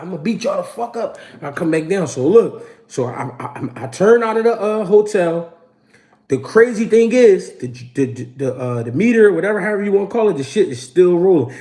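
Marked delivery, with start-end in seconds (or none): 0.0-1.2 mock hot-headed tough-guy bravado, trash-talking tone. Retelling threatening two people after a fight: retelling own hot-headed threats. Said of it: "I'm talking hot".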